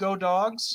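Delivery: plain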